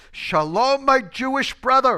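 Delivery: very high, very loud, slow, booming voice. Retelling how a man greeted him every morning coming into class: imitating Caesar's booming voice. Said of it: "with a booming voice".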